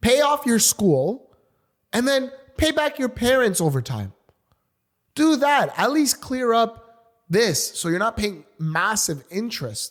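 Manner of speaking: angry, pissed-off ranting with the pitch pushed up. Speaker, pissed off, giving listeners a tip about debt: angry ranting. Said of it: "I'm pissed off".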